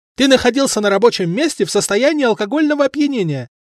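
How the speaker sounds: high, triumphant, declaring tone. A man sniffs brandy on the narrator and declares it, triumphant announcement. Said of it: "торжествуя объявил он".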